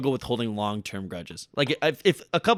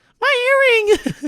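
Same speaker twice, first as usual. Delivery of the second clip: put-on fake sobbing, higher and louder; 8 dB louder than usual. Acting out a famous crying scene about a lost earring: mock crying Kim Kardashian impression. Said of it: "is the Kim Kardashian".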